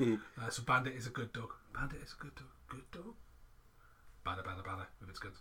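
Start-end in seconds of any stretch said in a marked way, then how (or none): 0.0-3.1 little robotic voice. Joking with others about a device translating pets, little translating robot voice. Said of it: "little translating robot voices".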